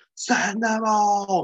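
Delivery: high, loud, slow, drawn-out unhinged scream. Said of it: "pure Gary Oldman".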